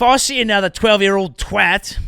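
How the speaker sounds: put-on Australian accent. Imitating the prime minister on a social media age limit, put-on australian accent. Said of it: "Is that a good Australian?".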